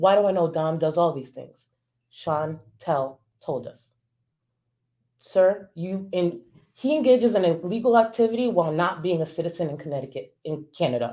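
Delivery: worked-up, agitated, heated venting. Explaining how you learned what you know, worked up. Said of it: "I'm really worked up".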